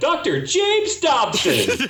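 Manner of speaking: very high, swooping voice, glowing with pride. Imitating Chris introducing a guest: Chris impression, beaming with pride. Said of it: "that's a very good Chris impression".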